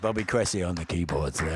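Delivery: radio announcer voice, on-air presenter delivery. Introducing the keyboard player to the audience, radio announcer voice. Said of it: "I got my radio voice back".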